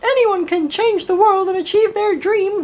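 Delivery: very high, squeaky voice. Speaker shows the idealistic way of saying it, in a Mickey Mouse voice. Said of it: "like a Mickey Mouse voice, like I just did then".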